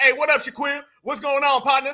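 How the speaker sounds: mock friendly buddy voice. Acting out a made-up greeting to a homeboy: acting out greeting a homeboy. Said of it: "I ain't never hollered at my homeboy and said".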